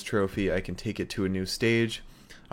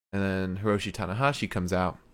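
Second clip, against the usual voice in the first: ordinary talk, nothing marked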